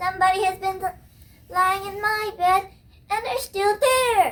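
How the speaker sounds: tiny, high, squeaky little-bear voice. Reading Goldilocks, the little wee bear speaks at his bed: little wee bear voice. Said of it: "in his little wee voice".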